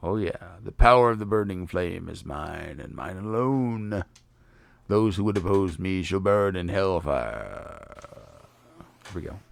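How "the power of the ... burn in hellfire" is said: very decidedly, firmly male voice. Reading the fire fiend's lines aloud: Marilith in a decidedly male voice. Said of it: "I gave her a very decidedly male voice".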